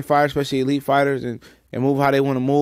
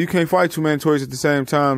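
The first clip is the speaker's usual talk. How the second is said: plain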